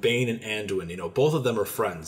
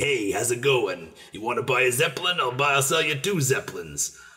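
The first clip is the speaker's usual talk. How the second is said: rasping stock goblin voice; 3 semitones higher than usual. Describing a goblin character from Cataclysm, the speaker imitates him: raspy goblin voice. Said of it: "this sort of raspy".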